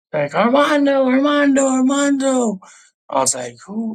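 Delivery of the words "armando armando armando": loud, very high, carrying call. Retelling his mom calling out his name, imitating her carrying call. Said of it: "you can hear from miles away".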